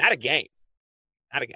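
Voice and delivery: well-practiced, rehearsed-sounding delivery. Imitating a famous quote after the other host names it: Allen Iverson impression. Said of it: "I have practiced it quite often".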